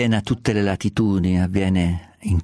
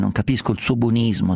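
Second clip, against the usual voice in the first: ordinary talk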